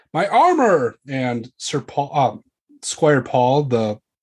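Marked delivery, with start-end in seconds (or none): 0.2-1.0 sudden, high-pitched exclamation, crying out. A knight calls out during a sudden attack, crying out. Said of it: "He cries".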